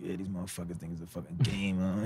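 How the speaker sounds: very quiet muttered half-whisper. Acting out someone in the corner half-whispering to themselves: imitating someone half-whispering to themselves.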